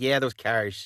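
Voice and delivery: put-on Midwestern-accented speech. Talking about the car industry in Michigan, say it in a Midwestern accent. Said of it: "I love the Midwestern accent".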